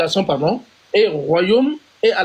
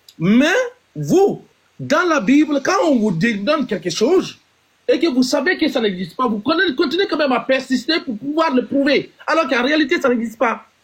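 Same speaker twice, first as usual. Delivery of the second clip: high, heated yell, shouting hard; 7 semitones higher than usual. Arguing with others about what the Bible contains, yelling. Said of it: "pourquoi tu cries même ?".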